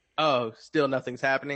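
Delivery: normal talking voice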